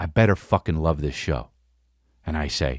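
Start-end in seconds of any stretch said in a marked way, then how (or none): 0.0-1.5 mock firm, stern, no-nonsense tone. Retelling what the wife said after looking at him sternly: imitating a stern warning. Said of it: "she looks at me sternly and she says".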